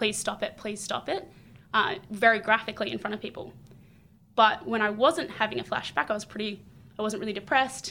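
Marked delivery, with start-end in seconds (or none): none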